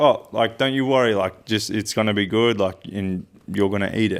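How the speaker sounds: ordinary talk, nothing marked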